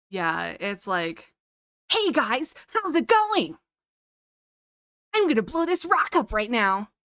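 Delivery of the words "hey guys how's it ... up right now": silly English anime dub voice, high and loud. Explaining why they can't go back to dubbed anime, silly american anime dub voice. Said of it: "the anime accent is is just very silly".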